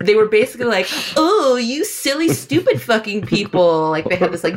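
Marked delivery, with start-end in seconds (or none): 1.2-3.9 high, drawn-out, mock giggling, teasing tone. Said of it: "shook their head and did this giggly sound".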